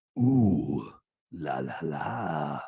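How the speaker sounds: fake creepy voice, hushed and very slow. Adding a little extra to a viewer's la la comment: put-on creepy tone. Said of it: "that creepy way I said that".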